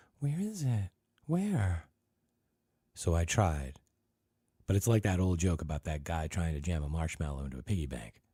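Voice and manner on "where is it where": high, breathy, breathless whisper, much slower. Reading a story aloud, a character speaks in a high, breathless whisper. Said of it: "Dana whispered in a high, breathless voice".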